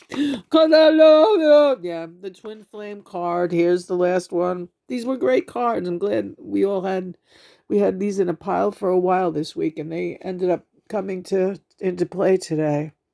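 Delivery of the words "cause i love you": very high, drawn-out, sobbing tearful speech. Answering another speaker who asks why they are crying: crying while talking. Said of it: "What are you crying about?".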